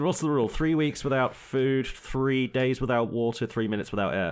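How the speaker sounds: usual speaking voice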